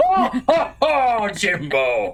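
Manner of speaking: loud, deep fake voice. Doing a Brian Blessed voice while playing: Brian Blessed voice. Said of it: "Leave this Brian Blessed".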